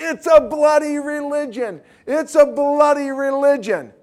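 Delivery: high, loud screaming at the top of her lungs.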